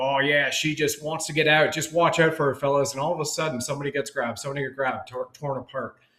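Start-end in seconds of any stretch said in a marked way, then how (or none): 0.0-2.9 put-on Australian accent. Retelling the Australian guy's line in a film's opening sequence, Australian accent imitation. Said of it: "hearing the Australian guy".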